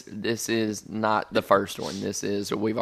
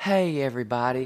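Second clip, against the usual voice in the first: very soft, quiet speech; 3 semitones higher than usual. Showing how to greet everyone at a book club: talking real soft. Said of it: "'cause you gotta talk real soft".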